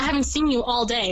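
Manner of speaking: plain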